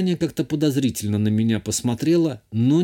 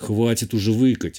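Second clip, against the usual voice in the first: plain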